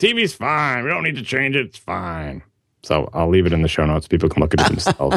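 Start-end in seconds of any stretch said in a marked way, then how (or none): 0.0-2.4 put-on high, swooping elderly person's voice. Describing an article that makes a straw-man argument, voicing its author: old person voice. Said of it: "An old person saying".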